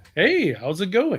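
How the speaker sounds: airy, easy tone with an audible smile. Discussing how the Batman actor sounded when playing Bruce Wayne, in a smiling Bruce Wayne voice. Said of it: "you could hear him smiling".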